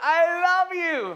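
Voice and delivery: high, slow shouting. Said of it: "And I'm like".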